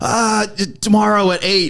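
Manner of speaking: screaming, very high and very slow, drawn out. Retelling a phone call with loud music behind: imitating Felix screaming. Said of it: "he's screaming".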